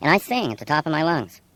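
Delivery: normal talking voice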